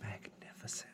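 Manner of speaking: breathy whisper under the breath. Voicing a character who looks at a player: whispering to herself. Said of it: "she kind of whispers to herself".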